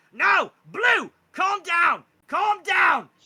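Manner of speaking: shrill goblin yell, very high-pitched and very loud. Game narrator voicing a goblin as a blue worm flails around, goblin voice. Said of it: "This goblin goes".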